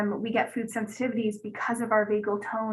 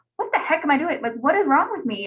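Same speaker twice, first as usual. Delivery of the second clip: high, loud jokey voice played for laughs; 5 semitones higher, 6 dB louder than usual. Speaker retells sitting in her naturopath's office; retelling in a jokey voice. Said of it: "I didn't say it in that joke kind of voice".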